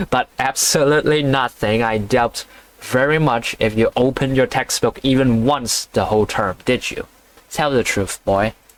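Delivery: ordinary delivery, nothing marked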